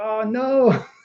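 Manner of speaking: acted sad dismay, put-on disappointment. Describing being outbid on an auction site, act out sad dismay. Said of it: "you're so sad".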